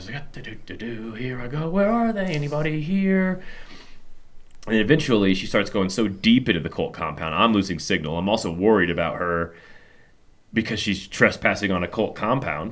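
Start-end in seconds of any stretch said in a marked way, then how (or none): 0.6-3.4 high, slow, out of breath, huffing and puffing. Retelling what Rachel said into her mic in a cult compound, imitating Rachel huffing and puffing. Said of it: "just huffing and puffing and kind of breathing hard".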